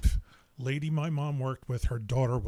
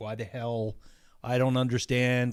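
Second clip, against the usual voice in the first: plain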